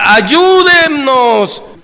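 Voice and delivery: high, drawn-out, loud yell. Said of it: "empieza a gritar".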